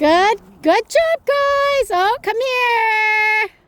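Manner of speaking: very high, very loud, shrill excited tone, drawn-out. Demonstrating how praise should sound, the speaker uses a high-pitched praise voice. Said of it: "like a high pitch voice".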